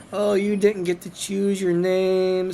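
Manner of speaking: mock-sympathetic, pitying, sad tone. Mocking people who pity a name chosen by others, mock-sympathetic sad voice. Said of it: "it's got this sympathetic sad voice like oh".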